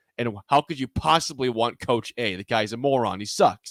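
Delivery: normal talking voice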